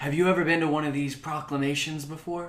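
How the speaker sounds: whispered speech. Role-playing a character nudging a companion at a proclamation: whispering. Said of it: "I'm whispering this".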